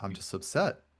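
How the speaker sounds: very quiet, calm, breathy, hushed near-whisper. Retelling how a man answered his friend after screaming, retelling a calm, quiet reply. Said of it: "he says it very calm and very quiet".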